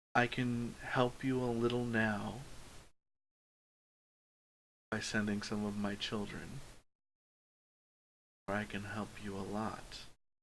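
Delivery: eerie, unnerving whisper. Describing a voice that whispers in both ears, unnerving whisper. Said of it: "And it whispers in at you".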